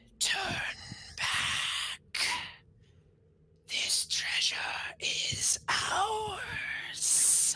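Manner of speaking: spectral, breathy, ghostly whisper. A game master voices fire spirits addressing the four players, in a ghostly whisper. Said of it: "a ghostly voice whisper in common".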